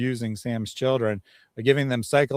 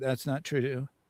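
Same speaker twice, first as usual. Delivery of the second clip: put-on hesitant, quieter delivery; 8 dB quieter than usual. Comparing two recorded takes, acting out the first one: retelling a hesitant reply. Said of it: "was kind of hesitant and was like".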